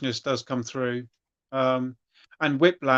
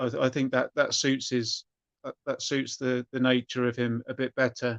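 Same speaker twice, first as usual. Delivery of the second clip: normal talking voice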